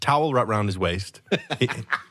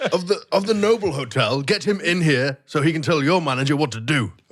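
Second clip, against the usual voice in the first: loud shouting; 8 semitones higher, 4 dB louder than usual. A player's character demands the hotel manager, shouting at the receptionist. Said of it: "you're standing there shouting at the receptionist".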